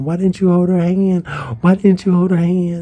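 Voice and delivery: put-on, high-pitched screaming. Retelling screaming at a cousin while crying in a front yard: retelling own screaming. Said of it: "I was screaming at my cousin".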